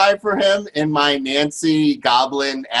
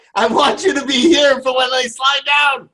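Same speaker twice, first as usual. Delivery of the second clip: panicked shouting, pitched high. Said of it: "I'm like".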